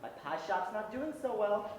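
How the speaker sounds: plain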